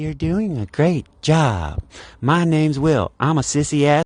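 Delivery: mocking, very feminine, simpering voice, high, slow. Complaining about a lead who watches him work the register; mocking Will's feminine voice. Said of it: "It's very feminine".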